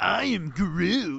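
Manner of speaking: rasping, creaking, rough growl of a voice. Retelling a favorite movie moment: Groot voice. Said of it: "it is fucking hysterical to hear Groot go".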